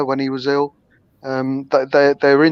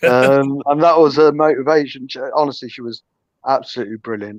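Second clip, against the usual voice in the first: plain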